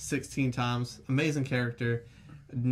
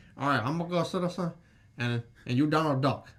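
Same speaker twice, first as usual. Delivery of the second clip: tough gangster-style voice; 2 semitones higher than usual. Retelling Al Pacino's scene at the junkyard: Al Pacino impression. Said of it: "that's a Scarface impression".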